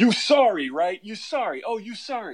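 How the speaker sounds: high-pitched, railing yell. Retelling an enormous man on the subway railing at someone: imitating a man yelling. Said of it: "just is yelling at this guy".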